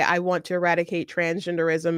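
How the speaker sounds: ordinary talk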